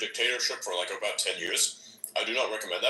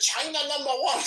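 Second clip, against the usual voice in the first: sarcastic fake Chinese accent, pitched way up; 3 dB louder than usual. Speaker retells the Bitcoin pumpers' slogan in a put-on sarcastic China voice. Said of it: "in the sarcastic China voice".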